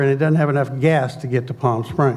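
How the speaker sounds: ordinary talk, nothing marked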